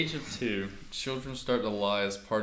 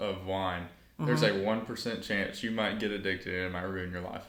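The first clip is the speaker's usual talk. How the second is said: plain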